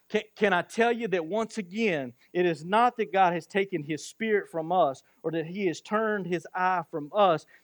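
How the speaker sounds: ordinary talk, nothing marked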